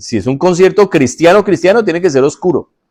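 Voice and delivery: mocking, sarcastic tone. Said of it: "Lo estoy diciendo sarcásticamente".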